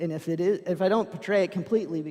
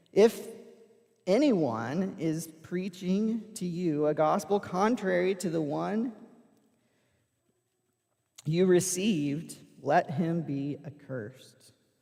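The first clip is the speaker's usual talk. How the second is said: ordinary talk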